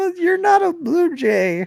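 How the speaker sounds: laughing while talking. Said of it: "I'm crying".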